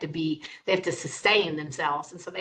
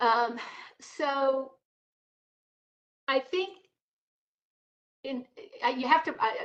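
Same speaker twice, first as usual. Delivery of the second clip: hesitant stammering, higher pitch; 8 semitones higher than usual. Answering a question about which cancers to target, the speaker is stammering. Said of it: "the reason I'm kind of stammering".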